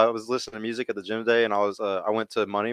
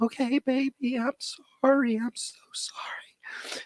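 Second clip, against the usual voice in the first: very slow, breathy, whispered, gentle, soft-spoken; 4 dB quieter than usual. Mocking men who never raise their voice: imitating a soft-spoken guy. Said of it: "they need a dude who never raises his voice, who talks like this".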